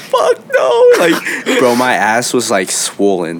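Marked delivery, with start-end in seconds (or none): 0.0-0.9 very high voice, sobbing through the words. Retelling answering their sister after a beating, retelling crying. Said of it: "I'm like crying".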